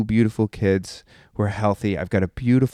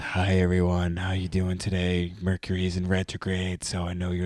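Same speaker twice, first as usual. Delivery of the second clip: soft, hushed, calm meditation-teacher voice; 6 dB quieter than usual. Mocking how other meditation teachers greet a class: imitating a soft meditation-teacher voice. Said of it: "I don't walk in with the voice that goes".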